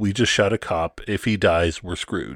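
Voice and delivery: normal talking voice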